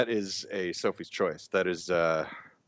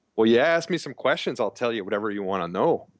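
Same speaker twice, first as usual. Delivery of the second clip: put-on upper Midwest Minnesota accent; 4 semitones higher, 3 dB louder than usual. Speaking for the rest of the show in a minnesota accent. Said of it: "I could do the Minnesota accent".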